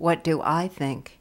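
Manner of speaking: ordinary talk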